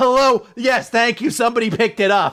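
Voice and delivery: irritated, exasperated. Retelling a scene where he answers the phone: imitating an irritated man. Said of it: "he's so irritated".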